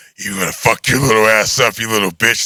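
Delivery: crude, vulgar, menacing horror-villain voice. Retelling a dream where Freddy Krueger threatens him: imitating Freddy Krueger. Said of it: "he was really like".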